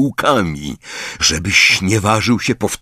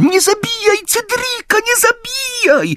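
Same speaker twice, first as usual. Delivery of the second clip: squeaky, shrill, very high, mocking, jeering shout. Narrator reading a boy taunting another about his nightmare: shrill mocking shout. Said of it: "zaczął wykrzykiwać piskliwym głosem".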